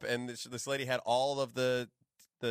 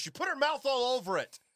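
mock shrill yelling, very high pitch; 12 semitones higher than usual. Retelling what a mom yelled to the dad at a park; retelling a mom's yell. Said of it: "she's yelling".

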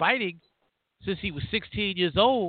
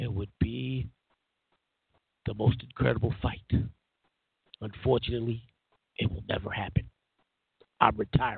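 very low, flat, droning monotone; 9 semitones lower, 4 dB quieter than usual. Storyteller quoting a boxer at a formal event, Sugar Ray Leonard monotone voice. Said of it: "in his monotone voice".

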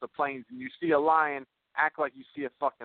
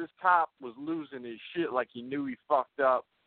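ordinary delivery

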